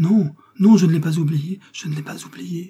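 high, loud, impassioned passionate outcry. Le Fanois seizes the woman's wrists and answers her, crying out. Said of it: "s'écria-t-il".

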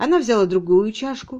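ordinary delivery

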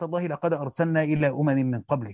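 ordinary talk, nothing marked

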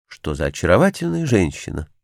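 plain

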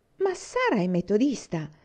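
appalled, shocked, scandalized outcry, swooping pitch. Miss Cornelia answers Susan's suggestion about Mr. Meredith's marriage with a scandalized exclamation. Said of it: "Esclamò la signorina Cornelia, scandalizzata".

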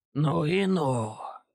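sibilant, hissing vampire voice. Reading a story aloud, a one-eared vampire hisses at the people he attacks. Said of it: "прошипел одноухий вампир".

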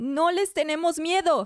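scared, frightened yell with breaking, cracking voice. Elena, cornered by guards in the engine room, shouts: fearful shout, voice breaking. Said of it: "Elena grita con la voz quebrada".

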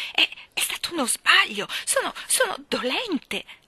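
halting stutter, very high-pitched and slow. Narrator voicing a woman shrinking under another's steady gaze, stammering. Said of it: "Ella balbettò".

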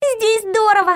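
very high, exclaimed aloud. A little girl answers when asked if she likes it, exclaiming. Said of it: "воскликнула [name]".

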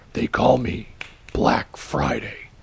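gritty, gravelly, rough raspy superhero voice. Reading a Santa story, the narrator voices a masked costumed man introducing himself: gravelly voice. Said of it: "In a gravelly voice".

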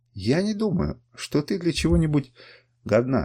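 usual speaking voice

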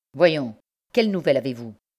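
curtly spoken. Narrating a man cutting short Mathéus's joking familiarity, asking his news curtly. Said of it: "dit-il sèchement".

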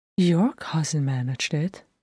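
ordinary delivery, nothing marked

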